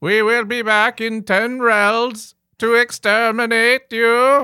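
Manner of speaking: very high, very loud, screechy, flat monotone. Two people argue over how to do Dalek voices; one demonstrates a Dalek voice. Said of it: "arguing about how to do Dalek voices".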